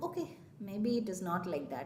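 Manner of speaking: low, soft, calm, accepting inner voice.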